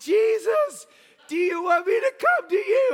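very high shouted call across a distance. Retelling calling out from a pier to a figure on the water: retelling own shout. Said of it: "shouting from the pier".

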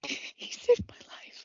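whispered, muffled, under-breath murmuring mutter. Retelling a past moment, acting out muttering under the breath. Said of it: "every once in a while under my breath".

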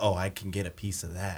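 hushed, half-whispered stage whisper. Retelling what a man in line half-whispered to his friend: imitating a half-whisper. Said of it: "whispers to his friend".

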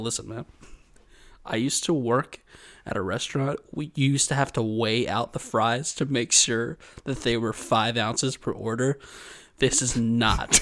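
hushed whisper under the breath. Retelling what they said in a dream to avoid a scene; acting out whispering. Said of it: "I'm like whispering to it to not cause more of a scene".

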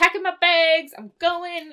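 thrilled, giddy, can't-wait excitement. Retelling a TV episode, acting out a character about to leave, imitating excitement. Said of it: "he's so fucking excited".

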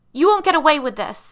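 very high, very loud, shrill sobbing yell. Reading a story, a girl confronts two monstrous girls; yelling through sobs. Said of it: "Allison yelled through her sobs".

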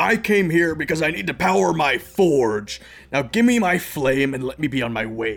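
loud, angry yell in a dwarf voice. A game narrator voices a dwarf yelling at a monk; yelling dwarf. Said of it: "a dwarf is yelling at this monk".

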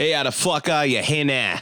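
fast, rough, butchered Boston accent, rattled off. A podcast host opens the show and greets a co-host: bad Wahlberg Boston accent. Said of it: "Is that how they say now in Boston?".

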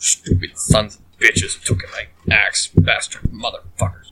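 muttered grumble, almost whispered. Playing a character stomping off after his axe is taken, just grumbling. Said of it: "just grumbling".

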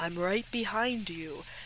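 eerie, soft, ghostly, creepy voice. Imitating a response that comes from the spirit box, in a creepy voice. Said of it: "a creepy voice going like".

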